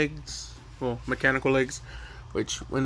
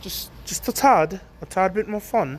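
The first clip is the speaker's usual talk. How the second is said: random put-on British accent, pitched up; 6 semitones higher, 3 dB louder than usual. While narrating a story, the speaker slips into a random british accent. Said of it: "Sorry for the br- random British accent".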